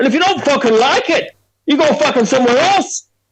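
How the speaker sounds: put-on very high voice, accent drifting between Scottish and Irish. Imitating a man refusing a customer, accent drifting Scottish or Irish. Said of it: "his accents kind of become Scottish or Irish when I do it".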